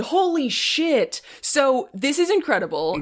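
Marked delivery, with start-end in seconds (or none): 0.0-1.2 mock, high, shocked, startled exclamation. Retelling their own reaction while watching the movie: imitating own scream. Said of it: "I fucking screamed".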